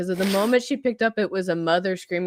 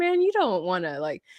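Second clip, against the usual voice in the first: plain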